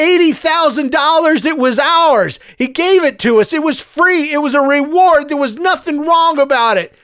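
rising pitch. A son argues back with his angry mother, voice rising. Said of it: "his voice rising".

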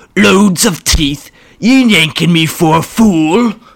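loud bellowing brute voice. Narrating a story, voicing Orc as he shouts his line: Orc bellowing. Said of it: "Orc bellowed".

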